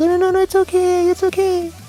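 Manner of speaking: fake-nice, mock polite, small, meek voice. Like someone declining an offer in a small, overly polite voice, pretending to be easygoing when they'd rather not make a fuss. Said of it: "that little shitty voice you do when you're trying to be nice".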